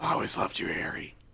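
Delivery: mutter under breath. Retelling what a character says to Harry, under his breath. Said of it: "That's what he says under his breath".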